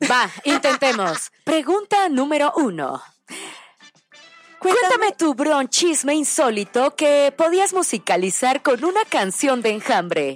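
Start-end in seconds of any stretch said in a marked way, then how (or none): 1.4-10.4 robotic voice-assistant voice. Posing a question to a guest, trying it in an Alexa voice. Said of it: "intentamos hacerlo con la voz de Alexa".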